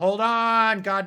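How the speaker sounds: very loud, very high, irritated, annoyed holler. Retelling dogs barking while someone is at the front door: retelling yelling at the door. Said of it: "so I'm yelling at the front door like".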